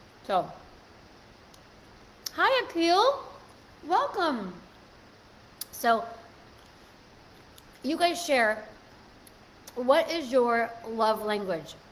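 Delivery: speaking with mouth full. Streamer greeting viewers while eating an ice cream bar, talking with mouth full. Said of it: "Probably not me eating with my mouth full".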